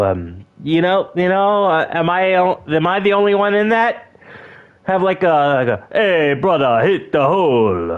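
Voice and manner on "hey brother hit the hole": fake Jamaican accent, reggae style, "hole" drawn out. Showing how a Jamaican guy would say the line: put-on Jamaican accent. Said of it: "like a Jamaican guy do it".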